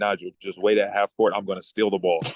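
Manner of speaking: ordinary talk, nothing marked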